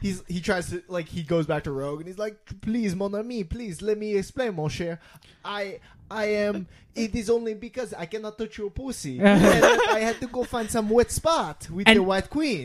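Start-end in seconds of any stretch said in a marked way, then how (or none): 2.6-12.6 bad put-on accent, sounds Italian, higher pitch. Retelling what a comic character says to Rogue, bad put-on accent. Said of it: "Why did he become Italian?".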